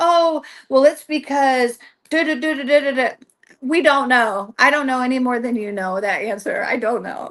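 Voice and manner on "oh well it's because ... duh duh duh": mock smooth, glib, phony patter. Mocking how a phony medium would answer: mocking a phony medium's glib delivery. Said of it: "if I was a smoke and mirrors full of shit type delivery".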